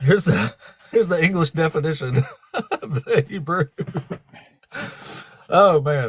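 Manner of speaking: slow, giggling, laughing through the words. Reading out a dictionary definition, laughing while talking. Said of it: "If I can quit laughing".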